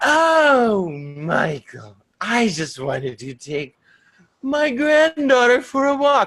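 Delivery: high, swooping demonic witch voice. Recounting her reply when he called asking where they went, in a demonic witch voice. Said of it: "manifesting like this demonic voice".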